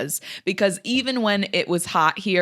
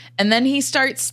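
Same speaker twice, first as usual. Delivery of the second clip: normal talking voice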